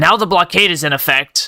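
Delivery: normal talking voice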